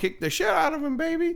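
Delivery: high put-on voice, yelling. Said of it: "the girlfriend's yelling out".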